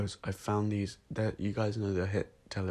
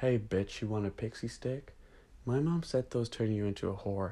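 put-on American accent. Ending the recording with a joke line: American accent. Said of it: "I don't like doing an American accent".

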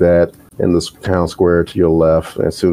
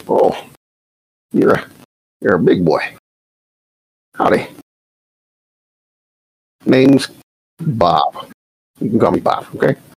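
put-on old man character voice; 4 semitones higher than usual. Voicing the old man Bob greeting the party: voicing old man Bob. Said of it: "He kinda leans up to Draconis".

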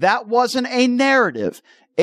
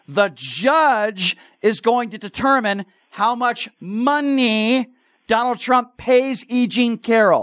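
slow, deliberate, spelled-out delivery. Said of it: "Am I speaking too fast for you".

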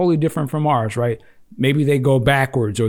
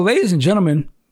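voice cracking, higher and faster; 5 semitones higher than usual. Host introducing the next item to the audience, voice cracking. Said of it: "My voice. What am I on?".

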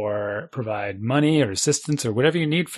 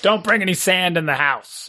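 strict, stern voice, pitched up; 5 semitones higher than usual. Describing arriving home sandy and salty, doing the mother-in-law voice. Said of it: "I really shouldn't do the mother-in-law voice".

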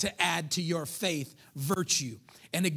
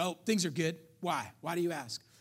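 defensive tone, spoken quieter; 4 dB quieter than usual. Retelling how a man answered a question about his girlfriend: imitating a defensive reply. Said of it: "he got real defensive right away".

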